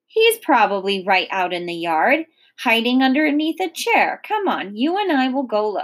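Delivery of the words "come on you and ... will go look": ordinary delivery, nothing marked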